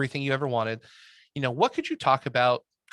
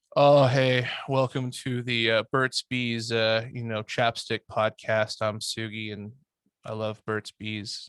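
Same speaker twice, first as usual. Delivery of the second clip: tired, flat, bored, lifeless, unenthusiastic delivery; 2 semitones lower than usual. Showing how a tired podcast host sounds: tired, flat, unenthusiastic. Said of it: "you can very, very quickly get sick and tired of talking about something".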